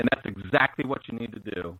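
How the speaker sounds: plain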